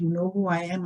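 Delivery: ordinary talk, nothing marked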